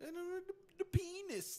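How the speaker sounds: put-on very high, very drawn-out, slow old-lady voice. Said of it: "She had, like, an accent when she said it".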